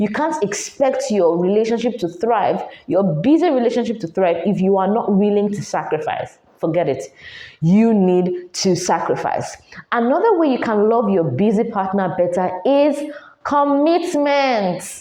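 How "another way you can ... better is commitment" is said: carried-away, forceful, shouty delivery. Talking about loving a busy partner better, the speaker is shouting. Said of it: "I'm shouting".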